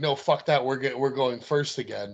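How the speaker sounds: ordinary talk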